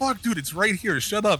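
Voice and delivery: urgent, high-pitched yelling.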